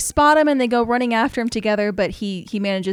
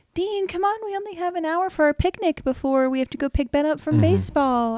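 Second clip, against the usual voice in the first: put-on soft, loving, tender tone, higher; 6 semitones higher than usual. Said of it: "she looks beautiful and soft, and she's like".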